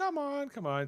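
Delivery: bad, squeaky, very high character voice. Retelling a scene, urging Worf along: terrible Deanna Troi impression. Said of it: "your Deanna Troy impression is terrible".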